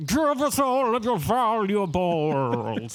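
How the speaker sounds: shouting. Voicing swamp spirits who surround the boat: yelling swamp spirits. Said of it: "yelling at you in their different, uh, rid-, uh, their different voices".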